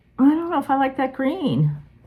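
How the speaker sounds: put-on whiny, high little kid's voice. Retelling an earlier reaction to a stitching pattern: imitating own whiny child voice. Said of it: "I sound like a whiny child".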